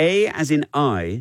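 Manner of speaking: slow, high Geordie A pronounced as I.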